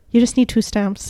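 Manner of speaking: put-on thick Irish accent. Retelling what a countryside shop clerk said about postage: imitating a thick Irish accent. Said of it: "This guy had a very thick Irish accent".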